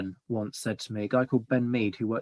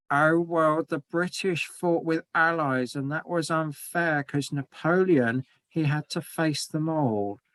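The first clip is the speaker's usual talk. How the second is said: put-on, high, derisive, mocking voice; 5 semitones higher than usual. Imitating people who call the allied win over napoleon unfair, in a mocking voice. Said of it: "my mocking voice that I've thrown into that".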